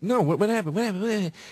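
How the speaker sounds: clueless, oblivious tone, repeated over and over. Retelling what Burr asked after the insult: imitating Bill Burr. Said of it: "And he goes".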